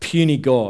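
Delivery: normal talking voice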